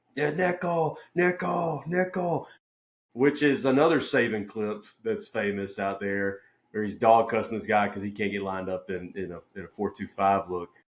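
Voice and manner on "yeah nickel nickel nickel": put-on high, shouted, drawn-out yell. Speaker recalls calling a formation during a scout team look, retelling a yell. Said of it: "I'm yelling".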